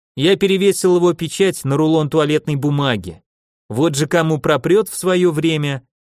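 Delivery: plain reading voice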